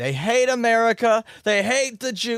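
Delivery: terrible yell, very high and loud. Describing a politician hyping up a crowd: terrible Donald Trump impression. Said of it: "that's my terrible Trump impression".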